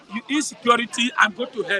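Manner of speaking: usual speaking voice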